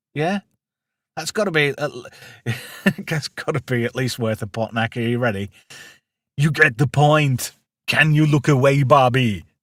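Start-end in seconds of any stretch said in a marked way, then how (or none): 6.4-9.4 put-on Austrian accent. Asked to do a line in the style of Arnold Schwarzenegger: Austrian accent. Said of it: "Do you want me to do it in the style of Arnold Schwarzenegger?".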